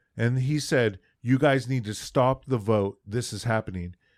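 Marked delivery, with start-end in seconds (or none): none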